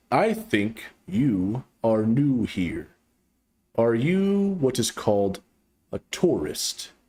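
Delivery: slow, deliberate, deep alien creature voice. Reading a story where a creature greets a newcomer; slow, deliberate creature voice. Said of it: "Speaking slowly and deliberately".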